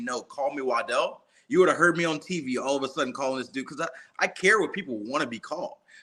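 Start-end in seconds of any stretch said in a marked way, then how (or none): none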